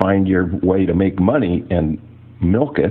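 ordinary talk, nothing marked

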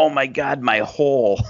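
mock sudden high-pitched screamed cry. Retelling how a woman landed awkwardly on the corner of the ring, imitating someone screaming. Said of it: "and she screams".

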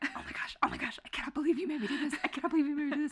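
put-on furious whisper-yell. Retelling hiding in a neighbor's backyard: imitating her own furious whisper-yell. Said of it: "furiously, like, whisper yelling his name".

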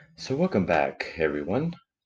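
low, soft, swooping, seductive sultry advertising voice. Host welcoming everyone back right after a commercial, in a sexy advertising voice. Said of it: "Using your sexy voice".

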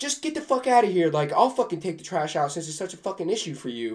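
mock fed-up, pissed-off, high angry outburst. Retelling what an annoyed housemate snapped at the speaker: imitating someone pissed off. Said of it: "she's, like, pissed off".

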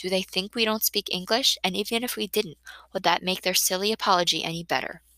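ordinary delivery, nothing marked

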